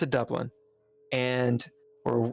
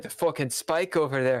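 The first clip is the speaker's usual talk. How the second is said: poor attempt at a put-on Irish accent. Retelling what people said about the spike in Dublin, in a bad Irish accent. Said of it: "I can't do an Irish accent".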